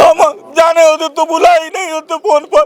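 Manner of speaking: high-pitched, loud, tearful, grieving wail. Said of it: "आप रोइए मत।".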